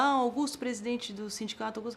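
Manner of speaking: ordinary delivery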